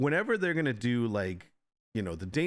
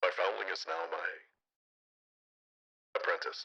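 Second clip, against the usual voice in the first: deep, hushed, breathy voice; 7 semitones lower, 5 dB quieter than usual. Trying the voice again after asking if it is deeper, in a deeper Mandalorian voice. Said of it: "is it deeper?".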